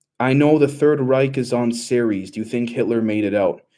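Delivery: ordinary talk, nothing marked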